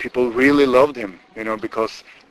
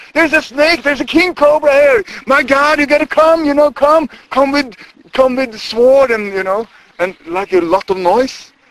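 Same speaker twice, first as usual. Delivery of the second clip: mock-scared shout, much higher and louder; 8 dB louder than usual. Retelling how a woman shouted to the whole village, imitating a frightened shout. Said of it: "she shouted to the whole village".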